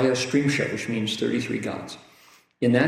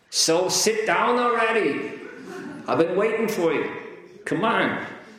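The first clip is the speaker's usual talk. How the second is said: Brooklyn accent, pitched a touch higher; 8 semitones higher than usual. Addressing the room, voicing God with a Brooklyn accent. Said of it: "God speaks with a Brooklyn accent".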